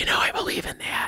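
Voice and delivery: soft, breathy, hushed whisper. Describing how everyone responded to the elevator speech: imitating a whispery voice. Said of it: "come back with this whispery voice".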